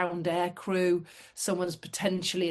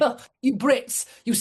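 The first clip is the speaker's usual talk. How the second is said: put-on French accent, raised and pitched up; 5 semitones higher, 6 dB louder than usual. Retelling a man's reply to the Brits teasing him, in a French accent. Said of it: "this is a French accent".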